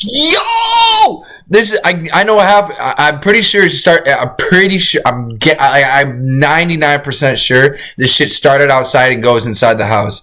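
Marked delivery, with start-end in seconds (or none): 0.0-1.2 high-pitched yelling. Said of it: "You need to stop yelling".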